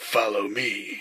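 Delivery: spooky put-on voice, eerie and creepy. Telling a Halloween story, voicing the nasty-haired guy: creepy voice. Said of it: "I'm gonna keep using this voice".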